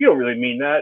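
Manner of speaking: plain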